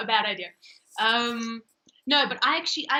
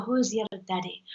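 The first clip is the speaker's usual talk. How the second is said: put-on Irish accent; 2 semitones lower than usual. Answering a request for an Irish accent: Irish accent. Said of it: "And then the Irish go".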